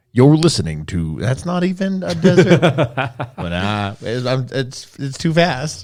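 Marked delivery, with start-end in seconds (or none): 0.1-1.1 put-on deep, lowered country voice. Imagining a desert radio station intro, trying a deep country Sam Elliott voice. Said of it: "I should do like a deep country voice".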